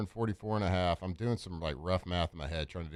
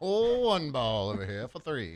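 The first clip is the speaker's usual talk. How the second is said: high, 1930s radio announcer voice; 6 semitones higher, 4 dB louder than usual. Joking about a player's nickname, calling him up in a 1930s announcer voice. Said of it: "I went to that 1930s announcer again".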